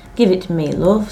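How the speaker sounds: ordinary delivery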